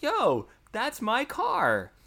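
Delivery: high, slow, drawn-out hyped voice. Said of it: "I was like".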